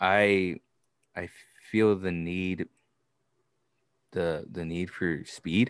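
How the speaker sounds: slow, soft monotone in broken phrases. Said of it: "in a very monotone voice".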